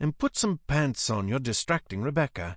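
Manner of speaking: ordinary delivery, nothing marked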